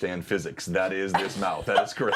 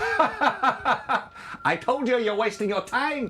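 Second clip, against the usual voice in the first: very high, very slow, drawn out, laughing through it. Voicing laughter heard behind a sealed door: laughing voice behind the door. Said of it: "and then you hear laughter".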